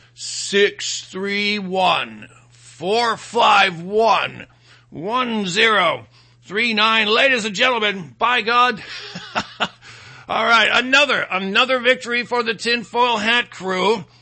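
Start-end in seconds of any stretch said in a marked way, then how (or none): 0.2-7.1 deliberately slowed down, slower. Show host repeating the call-in number for the liberals, slower. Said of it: "I'll say it slower for the liberals".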